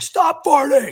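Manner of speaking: very high, shrill, very loud screaming yell. Told by his dad to stop the farting, re-enacting screaming at people behind him. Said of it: "So I'm screaming behind me".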